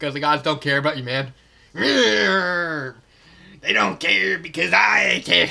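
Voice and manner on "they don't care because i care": very slow, raised, rasping, creaky villain voice, drawn-out "they". Acting out the villain answering the others: imitating the villain's voice. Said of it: "I don't know why I'm continuing with this".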